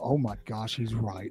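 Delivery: startled, slow, panicked realization with dawning dread. Joking about another speaker waking at night: imitating someone waking in a panic. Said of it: "wake up in a cold sweat and go".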